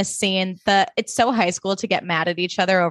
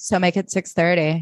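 put-on utterly expressionless, bone-dry deadpan delivery. Recapping a scene, speaker quotes Zoe's reply to Jesse, imitating Zoe, mock-deadpan. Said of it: "super deadpan".

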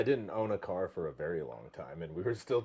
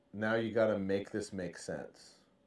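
ordinary delivery

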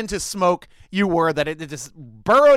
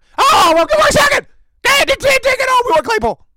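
put-on excitedly screaming dog voice, much higher, louder; 7 dB louder than usual. Speaker acts out the Packers offering picks for Claypool, in a put-on excitedly screaming dog voice. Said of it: "Like my dog screaming excitedly voice".

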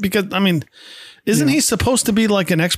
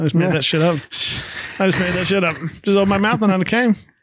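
ordinary talk, nothing marked

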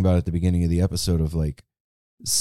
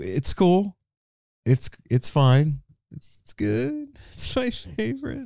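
exaggerated fake sobbing, pitched way up, swooping; 12 semitones higher than usual. Answering how they have been after a busy month: mock crying. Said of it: "Why are you crying?".

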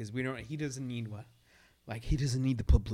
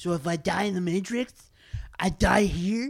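dopey, dumb-sounding, loud, pitched-up voice; 8 semitones higher, 7 dB louder than usual. Reading the Matrix scene aloud, voicing Neo: stupidest Neo voice. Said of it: "I'm just going to give him the stupidest voice ever".

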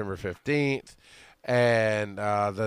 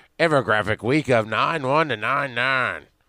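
mock old-fashioned newsreel announcer voice; 4 dB louder than usual. Announcing this week's infographic dates in an old-news announcer voice. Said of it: "and I'll do the voice for it just like that".

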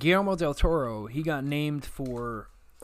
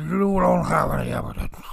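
rough, creaky, gravelly voice; 5 dB louder than usual. Joking about being possessed by the ghost of Nixon: Richard Nixon voice. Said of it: "possessed by the ghost of Nixon".

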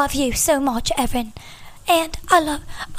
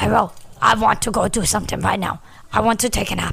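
low-pitched talking dog voice; 5 semitones lower than usual. The speaker shows how the family gives their dogs voices, Lorelai's dog voice. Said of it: "They all have their own voices".

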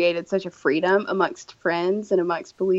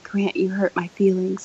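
put-on whisper. Retelling hiding behind a wall to admit hurt feelings: retelling a whisper. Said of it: "And I whisper, like".

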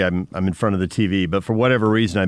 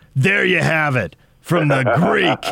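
high, signature broadcaster announcer delivery; 6 semitones higher than usual. Retelling a moment from a football broadcast: Brent Musburger voice. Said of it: "in that trademark voice".

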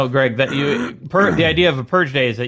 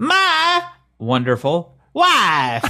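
put-on voice, high-pitched and swooping; 6 semitones higher than usual. Showing how the phrase still has to be said: Borat impression. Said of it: "You still have to say it like Borat".

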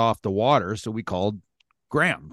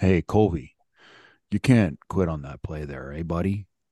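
sarcastic mock-gentle voice, lower; 4 semitones lower than usual. Retelling a teammate's on-ice words in a mockingly softened way. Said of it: "You just said it like this".

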